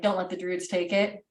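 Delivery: plain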